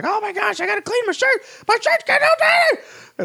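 flustered, very high-pitched, freaking-out panic. Act out Charlie Day getting sauce on his shirt at a party, in a freaking-out Charlie Day impression. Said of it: "he's freaking out and he's like".

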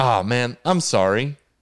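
slow, deeply sincere, sympathetic tone. Telling a story about consoling a man who was crying: retelling a genuine apology. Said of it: "As genuinely as I could".

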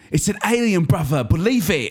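high, heavy movie-trailer delivery in thick put-on accent. Quoting a line from a movie trailer: imitating a thick accent. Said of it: "thick, thick accents".

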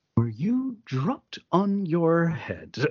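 each word carefully enunciated. Retelling a film scene where a prisoner answers a guard: carefully enunciated Bruno S. imitation. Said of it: "very carefully enunciated every step of it".

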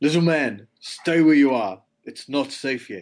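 insistent, very firm tone. Turning attention back to Gil, who is near a goblin: very firm tone. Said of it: "in a very firm tone".

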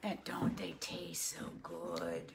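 put-on creepy murmur, very low. Speaking to a listener who then objects, talking creepy. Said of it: "Why are you talking creepy like that?".

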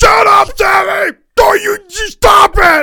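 screaming, very high and loud.

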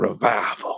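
"revival" pronounced in a Southern US accent. Saying the word they're obsessed with in a Southern accent on 'revival'. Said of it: "I say that in my Southern accent".

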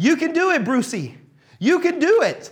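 mock very high, shrill cheering shout. Retelling a movie scene where a girl cheers from the crowd: imitating a shout. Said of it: "she shouts".

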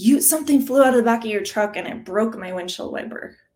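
riled-up, angry, accusing complaint. Retelling what a driver said after following the speaker home, imitating an angry man. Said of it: "he's all angry and he's like".

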